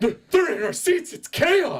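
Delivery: shrill, loud, indignant whining. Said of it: "the guy's like".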